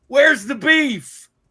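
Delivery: put-on very loud, high little old lady shout. Tired of a repeated phrase, doing the Wendy's commercial lady for people who remember. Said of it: "I'm gonna do like the little lady".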